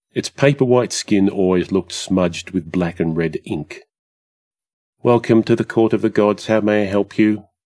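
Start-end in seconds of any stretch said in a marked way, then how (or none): 5.0-7.3 listless, uninterested, bored flat monotone drone. Welcoming a visitor to the Court of the Gods, in a bored monotone. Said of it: "Gob said in a bored monotone".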